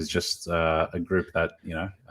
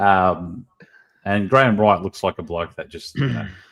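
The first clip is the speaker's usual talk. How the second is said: plain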